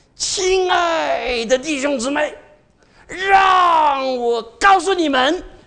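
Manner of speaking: drawn-out sing-song tone. Showing how people in Taiwan used to talk, with drawn-out intonation. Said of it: "以前我们在台湾都是拉腔调的呀".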